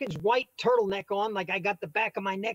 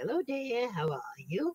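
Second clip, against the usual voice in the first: soft, slow put-on little old lady voice; 7 dB quieter than usual. Retelling doing voices for friends, putting on a little old lady voice. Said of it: "I'll do the do the little old lady".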